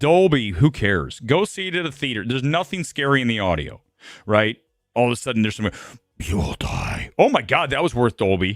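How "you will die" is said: eerie, whispered demonic voice. Reviewing a film's audio, imitating its scary moment in a demonic voice. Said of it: "I really heard that demonic voice".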